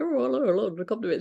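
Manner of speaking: upper-class, posh woman's voice. Retelling a story, imitating how a posh woman speaks: imitating a posh woman's voice. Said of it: "she does speak like this".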